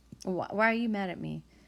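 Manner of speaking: ordinary delivery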